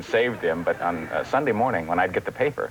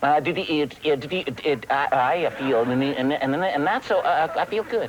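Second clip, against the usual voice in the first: put-on stuttering cartoon pig voice, lower pitched; 6 semitones higher than usual. Answering the other performer's greeting in character, in Porky Pig voice. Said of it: "You as Porky".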